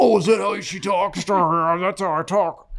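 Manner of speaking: slow, puppet-like frog voice. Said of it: "You sounded like Kermit the Frog".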